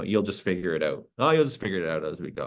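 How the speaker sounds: plain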